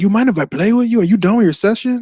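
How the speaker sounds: heavy put-on Spanish accent, pitched very high. Retelling a Spanish guy from the studio down the hall asking to join, strong Spanish accent. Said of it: "A strong accent".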